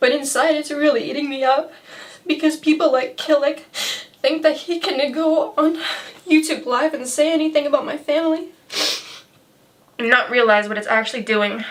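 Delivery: crying while talking. Telling viewers how hurtful comments about family feel, crying while talking. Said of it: "I'm really sorry for getting so riled up and crying".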